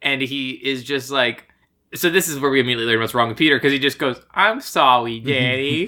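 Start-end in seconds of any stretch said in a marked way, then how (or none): 4.3-5.9 put-on babyish three-year-old toddler baby talk. Recapping a bad movie, quoting the little brother Peter: talks like a three-year-old. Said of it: "He talks like he's 3 years old".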